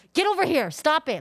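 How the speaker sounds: mock shrill scolding yell. Retelling a mom at the grocery store: imitating a mom yelling. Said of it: "yelling in public at her child".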